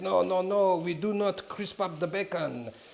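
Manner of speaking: slow, terrible, put-on French accent. Retelling what a chef in france said about bacon: terrible put-on french accent. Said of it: "that's a terrible accent".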